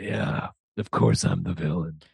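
awful, very low, creaky, rough superhero rasp. Retelling how a man answered being accused of a killing, in the worst Batman voice. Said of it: "he's doing like the worst Batman voice".

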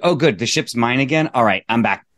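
ordinary talk

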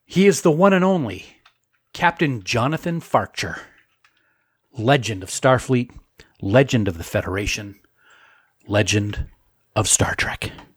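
epic, dramatic movie trailer narrator voice. Introducing someone on the podcast in a movie trailer voice. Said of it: "sounded like a movie trailer".

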